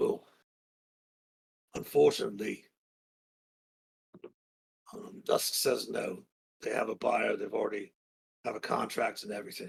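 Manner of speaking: hushed half-whisper under the breath. Narrator voicing a character who leans over in a busy room, half-whispering. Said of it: "he kind of whispers over and says".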